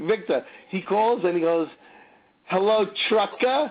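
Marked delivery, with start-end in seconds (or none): 2.5-3.7 put-on tipsy, boozy, pitched-up drunk voice. Retelling a friend's phone call greeting: imitating drunk Chrissy. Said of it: "The way Chrissy says it".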